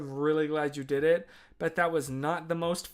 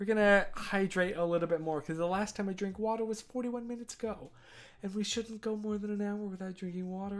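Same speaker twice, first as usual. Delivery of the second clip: patronising, lecturing, talking-down tone; 4 semitones higher, 6 dB quieter than usual. Speaker chatting casually to listeners: condescending. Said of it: "why am I talking to you in such a condescending voice".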